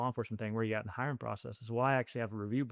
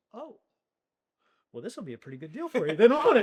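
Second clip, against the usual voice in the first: very high, very loud, booming, big swooping odd cadence; 10 semitones higher, 10 dB louder than usual. Retelling a job interview question from the captain: imitating Captain Common's dry way of talking. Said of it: "he just had a funny way he talked".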